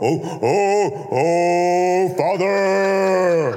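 mock pious, churchy prayer voice. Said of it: "That's not a prayer".

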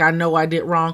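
ordinary talk

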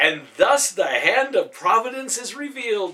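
loud announcing tone with a hint of excitement. A character announces to the confused men: announcing with a hint of excitement.

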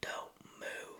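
barely audible, very quiet whisper. Retelling a hunt where someone videotaping behind him warns him, retelling a whisper. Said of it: "he just whispers".

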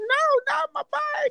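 very high-pitched, shrill, upset scream. Retelling what an upset mom cried out: imitating someone screaming. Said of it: "She's screaming".

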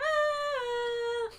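put-on yelling like a toddler. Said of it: "just yelling".

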